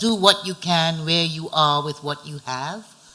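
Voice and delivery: plain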